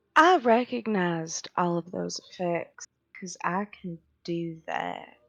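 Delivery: very calm, steady, composed, low voice. A player voices Ace turning immediately to the group, in a very calm, low voice. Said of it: "still in a very calm, low voice".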